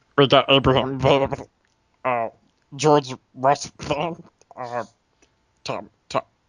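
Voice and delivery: put-on alien character voice with clenched throat. Playing an alien naming four heads on a mountain: put-on alien voice. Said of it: "I gotta get the voice back".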